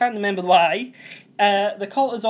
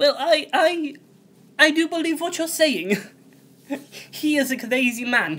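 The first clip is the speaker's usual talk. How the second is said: lovely, slightly higher voice; 6 semitones higher than usual. Retelling the scene where Ali tells her about the cult, in Mayor Winningham's lovely voice. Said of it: "this is in her lovely voice".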